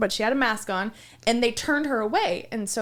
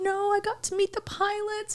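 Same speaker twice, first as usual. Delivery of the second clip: put-on tiny, high, small little-girl voice; 11 semitones higher than usual. Retelling what she said after meeting the pilots; imitating her little voice. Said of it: "and her little voice".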